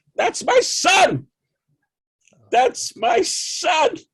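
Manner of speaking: shrill, very high, very loud screaming shout. Retelling his mother seeing his name in the film credits, imitating his mother's scream. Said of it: "she screamed out".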